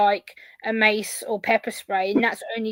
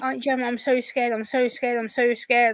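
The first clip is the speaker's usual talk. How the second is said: put-on scared, frightened, pleading child voice. Retelling a nephew's words outside a locked-down school: imitating a scared child. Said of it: "he was a nervous wreck".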